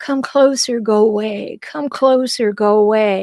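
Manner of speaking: slow, controlling, manipulative push-and-pull tone. Acting out how people who hurt others pull close and push away: acting out a controlling hurtful person. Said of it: "who enact this little game".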